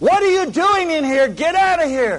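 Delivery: very high-pitched, loud, rushed, rattled-off outburst. Retelling being woken from deep sleep, imitating Jan in a high voice. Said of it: "says in a high voice".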